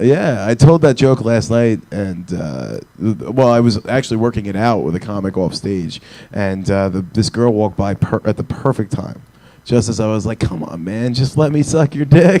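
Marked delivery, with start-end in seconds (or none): 10.4-12.4 fully committed, pleading, begging tone. Retelling working out a joke off stage: imitating own pleading. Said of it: "sitting there begging to blow this dude".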